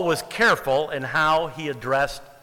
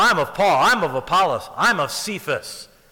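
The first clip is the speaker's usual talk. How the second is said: acted-out arrogant, boastful tone full of attitude. Reading out people boasting they follow paul or apollos: mock-arrogant, egotistical tone. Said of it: "I can't read that without reading it arrogantly, with an attitude of ego in it".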